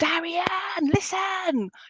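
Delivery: very slow, loud, carrying call. Telling a person they are not listening to themselves: shouting to someone. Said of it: "but I want to shout to you".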